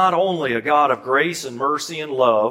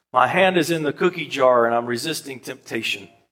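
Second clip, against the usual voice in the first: ordinary talk, nothing marked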